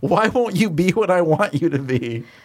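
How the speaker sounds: put-on mild yell, high, slow and drawn out. Retelling a character's line from an episode: imitating a yell. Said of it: "and she yells".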